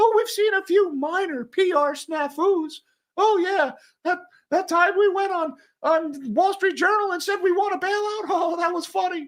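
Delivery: very high cartoon mouse voice. Mocking how company leaders talk down their PR snafus, Mickey Mouse voice. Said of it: "Why am I using Mickey Mouse's voice?".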